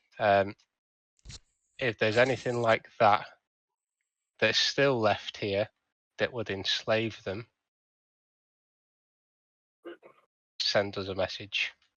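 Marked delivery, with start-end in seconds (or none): 1.8-11.7 muttering quietly under breath, lower and quieter. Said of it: "I will mumble under my breath".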